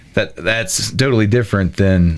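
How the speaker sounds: plain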